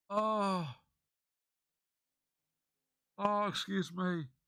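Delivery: tearful, high, very slow, holding back tears. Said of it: "I'm trying not to break down".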